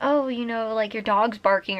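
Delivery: plain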